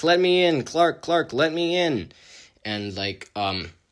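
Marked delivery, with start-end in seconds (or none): 0.0-2.1 put-on, pitched-up yelling. Retelling a scene, the speaker acts out a character behind a wall, retelling a yell. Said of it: "Kat is yelling like".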